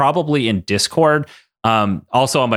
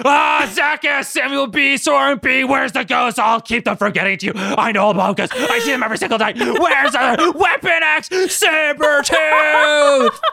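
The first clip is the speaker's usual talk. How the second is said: very high, shrill, pitched-up screaming. Reading supporter names as Logan running in screaming: Logan screaming voice.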